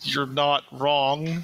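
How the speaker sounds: very slow, dragged-out drawl. A man found lying behind a counter answers the person greeting him, very slow. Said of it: "He says very slowly".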